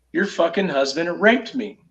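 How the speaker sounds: ordinary delivery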